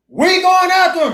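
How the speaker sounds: very high, shrill battle shout. Speaker acts out the sons of Jacob charging, retelling a battle yell. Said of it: "Yelling and screaming and everything".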